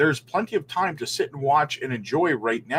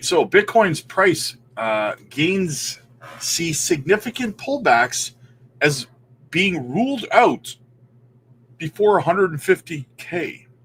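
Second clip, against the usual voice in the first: slow delivery broken by hiccups; 3 semitones higher than usual. Host reading an article aloud to viewers, talking with hiccups. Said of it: "I get the hiccups".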